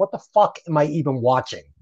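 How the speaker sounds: ordinary delivery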